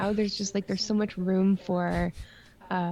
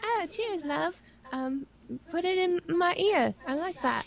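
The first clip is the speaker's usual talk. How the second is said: put-on British accent, very high-pitched; 9 semitones higher than usual. Retelling finally getting into voice chat with random players, mock British Tracer voice. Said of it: "And I was talking like this".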